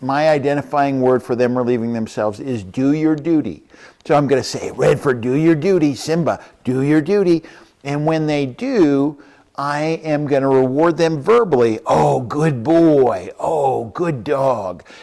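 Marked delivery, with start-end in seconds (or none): 11.8-14.8 very slow, drawn-out praising voice, as if to a dog. Rewarding the dogs verbally after they do their duty, dog praise voice. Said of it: "And that's my reward voice".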